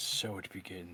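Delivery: soft, low, ominous, dramatic whisper.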